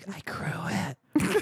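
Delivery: soft, hushed, breathy, confiding whisper. Retelling a scene where she leans close to your ear: imitating a whisper. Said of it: "she whispers into your ear".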